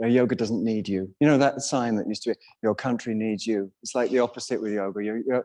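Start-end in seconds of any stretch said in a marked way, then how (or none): none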